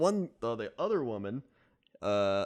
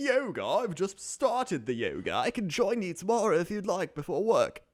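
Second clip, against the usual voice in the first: raised pitch, conversational; 5 semitones higher than usual. Retelling what a man on a train said: imitating a Hugh Grant-like man. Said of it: "basically Hugh Grant from every Hugh Grant movie".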